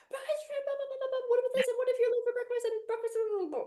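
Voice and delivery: stressed, panicky, fearful, rushed, very high-pitched rattle. Speaker demonstrates how a fear-driven thought sounds, stressed and fearful. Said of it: "then that's fear".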